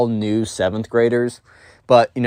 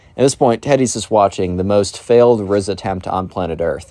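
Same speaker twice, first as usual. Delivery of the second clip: normal talking voice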